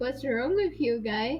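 plain

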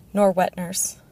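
plain

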